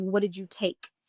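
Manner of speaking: soft, sneering, jeering, mocking taunt. Retelling freaking out, the speaker voices the mocking voice he heard; retelling a mocking voice. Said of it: "it's like a mocking voice".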